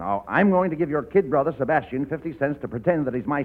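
ordinary talk

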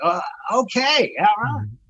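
put-on excitement, high and drawn-out. Retelling how someone reacted on meeting a person, imitating someone getting excited. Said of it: "he got excited".

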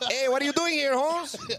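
bad, very high, overdone put-on Mexican accent. Listener redoing a storyteller's quote of a man, in a terrible Mexican accent. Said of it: "That's a terrible Mexican accent".

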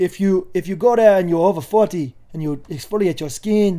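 loud, poorly done, put-on Jamaican accent. Retelling what a Trinidadian boat driver told them: Captain Jim's bad Jamaican-style accent. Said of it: "it's a bad accent".

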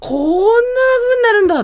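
high, loud, stunned gasp of shock.

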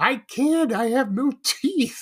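mock, very high-pitched, drawn-out scream. Retelling a TV scene where the hostage lady answers: imitating a screaming hostage. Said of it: "she's screaming".

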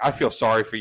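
normal talking voice

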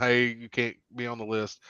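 plain

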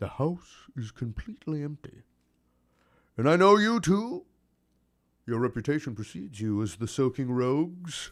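jovial character voice. A game master voices the man behind the table greeting the players, jolly fat man character voice.

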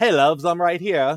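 put-on very loud, high British accent. Describing a new character's first appearance, the speaker quotes her in a stereotypical British accent. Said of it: "like stereotypically British she talks".

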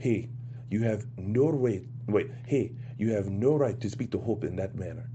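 put-on French accent. Trying to get right how a man sounds, French accent impression. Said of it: "You've been working on your French accent".

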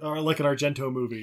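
ordinary talk, nothing marked

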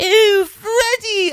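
put-on high, slow, proper British accent, wailing. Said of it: "very, like, proper British".

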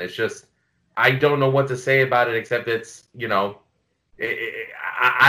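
faltering, choked-up stutter, words catching in throat. Trying to say why a loved album matters: choked up, stuttering. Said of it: "See, I'm stuttering right now".

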